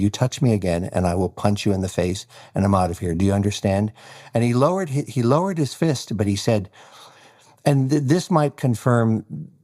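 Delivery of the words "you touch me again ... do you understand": plain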